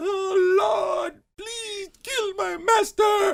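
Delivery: acted very high, very slow, drawn-out tearful crying. Retelling a movie scene where a woman prays in the fields: imitating someone crying. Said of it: "went running into the fields crying like".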